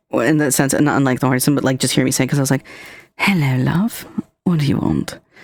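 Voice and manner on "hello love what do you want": casual, put-on British accent. Speaker retells greeting someone in a British accent. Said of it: "I do a British accent all the time".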